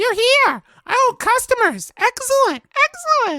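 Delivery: very high, piping, super high-pitched character voice. Playing a character in an acted scene, in a super high-pitched voice. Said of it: "which one the super high pitched voice is".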